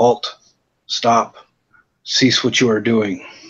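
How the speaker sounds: level, flat monotone robot voice. Droids come walking up in a story, speaking in a monotone droid voice. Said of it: "in the typical monotone droid voice".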